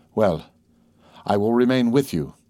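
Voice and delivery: ordinary delivery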